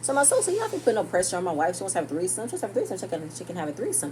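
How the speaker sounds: very fast, rushed, nonstop rapid-fire delivery. Retelling what was said in a conversation, speaking really fast. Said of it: "I'm speaking really fast right now".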